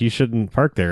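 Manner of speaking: ordinary talk, nothing marked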